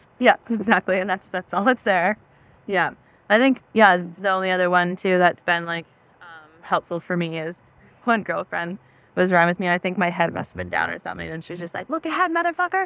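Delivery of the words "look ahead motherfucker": put-on very high, fierce, aggressive screaming. Recalling what a girlfriend screamed when their head was down, retelling a screamed command.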